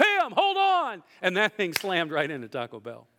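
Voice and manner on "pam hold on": play-acted shrill, very high shout. Retelling yelling out a car window: imitating own past yell. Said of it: "I yelled out the window".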